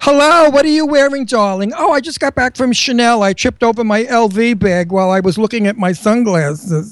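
snide, showy, sarcastic drama-queen voice, heavily laid on. Mocking the serious, sarcastic queens: imitating a sarcastic queen. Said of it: "these serious, sarcastic queens go nowhere".

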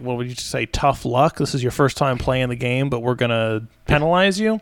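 ordinary delivery

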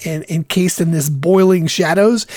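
normal talking voice

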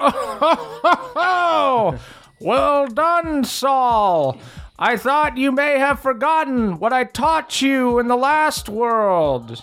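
put-on very high, lilting, sing-song old frog creature voice. Voicing an unseen old bullywug praising Saul's catch: old bullywug voice. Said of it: "you hear a distant voice go".

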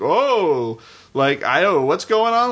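dim, confused bumpkin voice, drawn-out "oh". Describing how minor film characters are mockingly depicted, dumb bumpkin voice. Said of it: "this dumb bumpkin who's just like".

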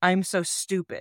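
plain

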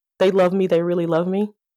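plain

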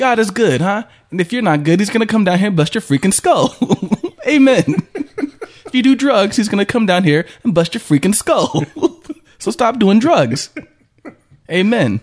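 put-on very high priest voice, preaching with Italian accent. A host redoes an earlier bit, doing the Family Guy Italian priest voice. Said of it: "the Italian priest".

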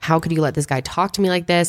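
normal talking voice

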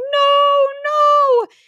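very high, loud pretend sob, wailed. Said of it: "start crying".

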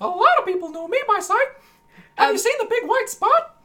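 cartoon-mouse-like voice. In a scene, a character answers another character's question: Mickey Mouse-like voice. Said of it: "Foxworthy sounds like Mickey Mouse".

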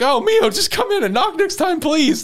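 mock very high, loud, frantic, freaked-out panic. Retelling an anime scene where Mio walks in without knocking, Shinpei freaking out, retold. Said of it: "just freaking out".

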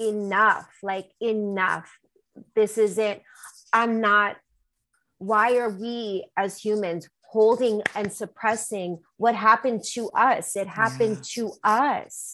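ordinary talk

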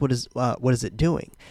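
normal talking voice

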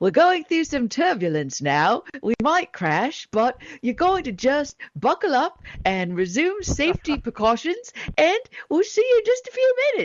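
cheery, bright, sing-song put-on New Zealand accent. Retelling a flight attendant's announcement during turbulence, mock-cheerful New Zealand accent. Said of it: "New Zealanders speak like everything's so happy".

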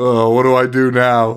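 mopey, sad lament. Retelling a movie scene as the coach: imitating a sad mopey coach. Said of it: "he's sadder than Alan about the whole fucking thing".

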